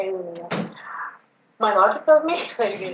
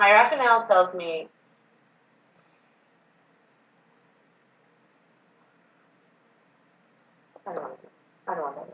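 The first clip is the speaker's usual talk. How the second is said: slow, deliberate delivery, barely holding it together. Talking it through with someone, speaking slowly to keep composure. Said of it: "I'm trying to speak really slowly because I'm gonna lose it".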